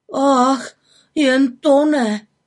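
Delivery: trembling, shaky voice, exclaiming in a quavering cry. A narrator reads a character's exclamation in a story: trembling voice, exclaiming. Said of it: "zvolal roztřeseným hlasem Vilík".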